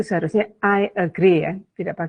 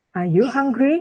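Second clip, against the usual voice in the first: pitch rises on the word hungry; 7 semitones higher than usual. Teaching yes-no question intonation in english class: rising on hungry. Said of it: "Itu kan naik ya".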